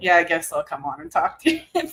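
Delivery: nonchalant, casually unbothered, swooping offhand tone. Retelling how dad agreed to come on: imitating dad, acting nonchalant. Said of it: "He always plays it nonchalant".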